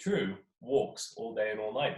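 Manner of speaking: plain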